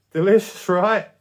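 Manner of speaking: trembling, unsteady voice. Jermaine, facing a creature in the water, speaks: shaking voice. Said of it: "Jermaine's voice shook".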